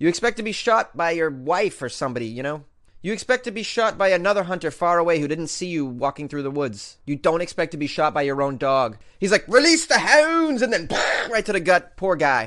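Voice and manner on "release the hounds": high-pitched, shrill, loud put-on Scottish accent. Acting out the hunter's command before his own dog shot him, scottish accent. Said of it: "I used a Scottish accent".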